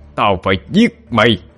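screaming out, yelling, shouting. Hà charges after the fleeing demon, yelling. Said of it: "Hà lao theo mà hét lên".

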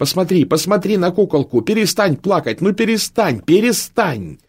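very high-pitched voice, nearly yelling. A daughter begs her crying mother to stop, almost shouting. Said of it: "почти закричала".

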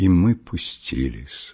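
plain

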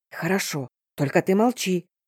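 usual speaking voice

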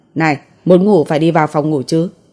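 plain reading voice

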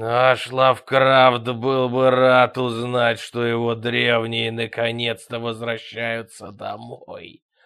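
loud, growling monster voice. As corpses close in on Angus, the creature speaks, growling creature voice. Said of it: "прорычало существо".

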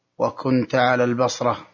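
ordinary talk, nothing marked

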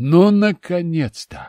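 loud, glad, joyful cry of delight. Narrator by a campfire noticing glowing hands, joyful exclamation. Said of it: "радостно воскликнул я".

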